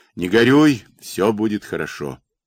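ordinary talk

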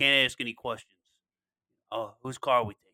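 put-on Boston accent. Retelling a character's line from The Town, in a put-on accent. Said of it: "That's a great accent, dude".

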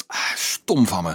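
ordinary talk

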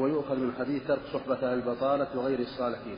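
usual speaking voice

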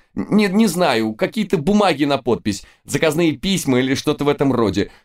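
high, near-shrieking squeal. Narrator reads the man behind the counter answering a question, almost shrieking. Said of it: "уже практически визжал".

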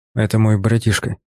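ordinary talk

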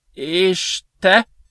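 high, quavering, trembling voice. A lanky blond youth, questioned by Troy, asks back in a trembling voice. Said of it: "remegő hangon".

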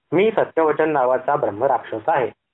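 ordinary delivery

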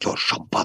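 soft, hushed whisper under the breath. Narrator reading Paul's line to Jessica, whispered. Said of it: "Suttogta Paul".

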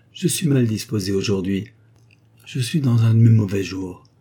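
plain

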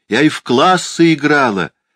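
high-pitched voice calling out. Mrs. bentley calls after girls running off across the lawn: shouting after them. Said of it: "крикнула им вдогонку миссис Бентли".

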